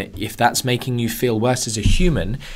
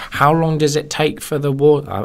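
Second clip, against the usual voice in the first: play-acted, teasing, mocking put-on voice; 4 semitones higher, 3 dB louder than usual. Podcaster voicing a listener question, in a mocking put-on voice. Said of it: "I don't know why I'm putting on a, that voice".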